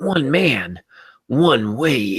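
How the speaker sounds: slow, dramatic movie-trailer announcer voice. Showing how to read a paragraph aloud, the speaker uses a movie trailer voice. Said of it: "Do it in the movie trailer voice".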